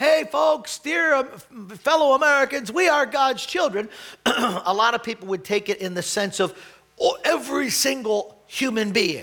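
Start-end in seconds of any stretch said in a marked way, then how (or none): 0.0-3.9 high, loud yelled call-out. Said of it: "I yelled out".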